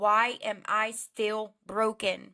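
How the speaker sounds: ordinary talk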